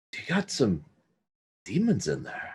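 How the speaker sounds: soft, hushed near-whisper. A player character interrupting the priestess of Loth, saying it really quietly. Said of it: "And I say it really quiet".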